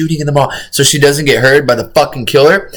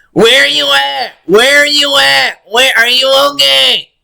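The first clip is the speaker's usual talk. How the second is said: mock shouting, higher pitch; 11 semitones higher than usual. Imitating a call-taker asking where the caller is, mock shouting. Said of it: "Yelling her fucking lungs out".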